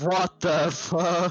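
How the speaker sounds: panicked, terrified screaming. Playing a character who panics in a dark room: panicked scream. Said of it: "he's screaming".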